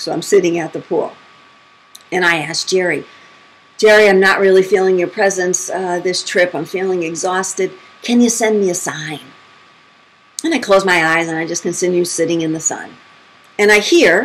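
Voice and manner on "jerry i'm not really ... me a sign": normal talking voice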